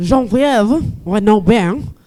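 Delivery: terrible, fake French accent and pronunciation. Host introducing the next presenter by name, in a bad French accent. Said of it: "let me put on my French accent".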